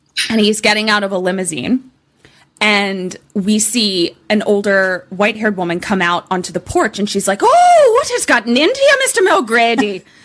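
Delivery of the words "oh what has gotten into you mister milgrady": very high, sing-song, swooping put-on Irish accent. Playing an older woman on a porch greeting mr. milgrady, in an irish accent. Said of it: "she's doing this Irish accent".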